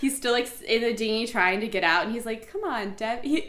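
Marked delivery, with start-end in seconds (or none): 2.5-3.5 tender, sweet, gentle coaxing tone. Retelling how a man still in the dinghy called to Debbie, imitating a sweet plea. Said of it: "The way he says it is like so sweet".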